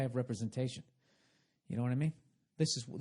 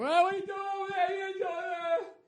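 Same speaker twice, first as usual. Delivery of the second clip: loud, high, yelled gym-guy call. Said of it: "gotta fucking yell at somebody".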